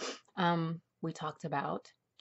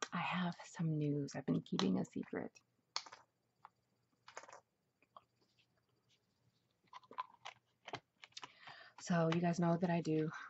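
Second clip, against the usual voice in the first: soft, hushed half-whisper through a sore throat. Opening a new video and telling viewers there is news, hushed, sore-throat voice. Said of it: "I feel like I'm whispering, but my throat hurts".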